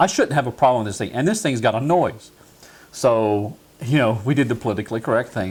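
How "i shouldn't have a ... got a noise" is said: ordinary delivery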